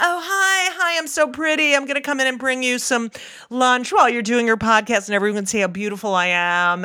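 put-on, sugary, show-off sweet voice. Mocking how she acts in front of everyone: imitating her sweet public persona. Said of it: "she has a whole other personality with me alone".

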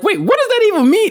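very high, baffled outburst.

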